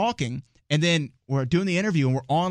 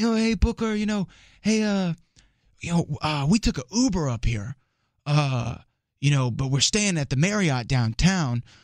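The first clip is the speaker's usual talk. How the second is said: loose, casual patter heavy with filler words. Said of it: "you know how he kinda talks".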